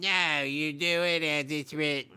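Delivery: put-on old man voice. Acting out an old person answering an actor: Truman Capote accent. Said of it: "This is my Truman Capote accent".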